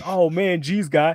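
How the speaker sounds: put-on surfer bro voice. Describing a warlord character who talks like a surfer: surfer dude voice. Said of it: "he talks like a fucking surfer dude".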